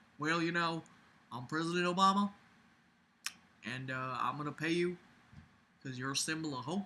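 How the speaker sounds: put-on very quiet, soft-spoken Southern accent. Act out President Obama telling people he will pay them, as Obama with a Southern accent. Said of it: "I don't know why I just made him Southern".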